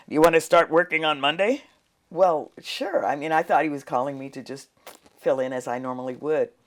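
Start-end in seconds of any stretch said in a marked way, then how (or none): 0.1-1.6 gruff, rough voice. Retelling a phone call from the news director: gruff voice. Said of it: "in his gruff voice".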